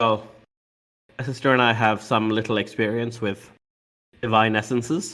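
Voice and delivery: flat, dry, low, no-biggie monotone deadpan. Voicing a character offering help with divine essences: dry tone. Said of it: "this dry tone".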